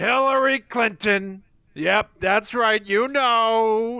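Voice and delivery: high, slow rousing shout, long stretched "know". Imitating a rally speech to thousands of people: Donald Trump rally voice.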